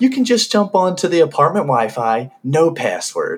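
snide, sarcastic tone. Retelling a story, quoting the girl who answered Allie, imitating a snarky tone. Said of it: "the girl like all snarky was like".

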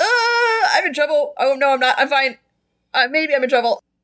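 nervous, flinching character voice. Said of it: "Phineas flinches and is just like".

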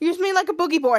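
ordinary talk, nothing marked

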